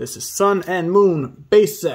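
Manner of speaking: plain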